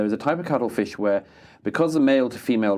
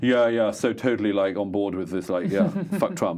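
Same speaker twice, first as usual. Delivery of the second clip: put-on British accent. Imitating men standing around in a story, in a put-on british accent. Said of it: "I can't do the American accent, but uh, I can do the British equivalent".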